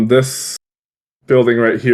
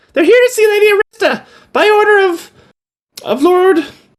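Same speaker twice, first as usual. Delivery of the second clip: put-on very high, piping child voice. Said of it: "Piper pipes up".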